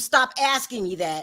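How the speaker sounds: ordinary talk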